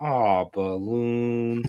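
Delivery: put-on sad voice. Retelling how Jake reacted to the deflating balloon: imitating Jake sounding sad. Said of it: "he's not mad, he's not upset, but he's sad".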